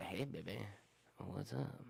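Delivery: put-on very quiet, slow, creaky, sleazy dirty-old-man voice. Speaker imagines being the old man someday, in a dirty old man voice. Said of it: "this old dirty old little guy".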